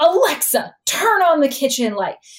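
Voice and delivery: acted, irritated, high-pitched, barked angry voice. Retelling how a mild-mannered girl orders the home assistant around, mock-angry command. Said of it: "like angrily".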